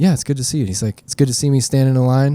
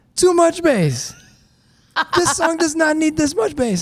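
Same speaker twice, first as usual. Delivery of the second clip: terrible put-on Jamaican accent, very high pitch. Retelling what a woman said after she walked in: bad Jamaican accent. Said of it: "that's a terrible Jamaican accent".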